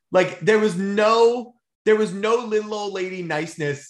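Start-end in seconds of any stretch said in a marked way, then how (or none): none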